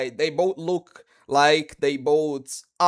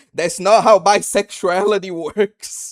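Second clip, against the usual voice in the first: acted, loud yelling outburst; 4 semitones higher, 5 dB louder than usual. Retelling yelling at the computer screen during a boss fight: imitating yelling at a screen. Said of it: "yelled at my computer screen".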